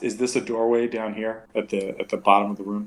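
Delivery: ordinary delivery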